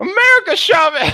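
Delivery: high-pitched, loud woman's voice.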